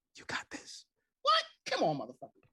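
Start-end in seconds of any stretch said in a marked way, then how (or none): 0.1-0.8 hushed whisper close to the ear. Acting out a girl saying it in your ear: imitating a whisper. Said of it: "right in the middle of your ear".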